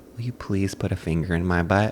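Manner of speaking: soft, shamefaced, embarrassed half-whisper. Imitating embarrassed men asking their girlfriends in private: imitating a soft half-whisper. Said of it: "they whisper so softly".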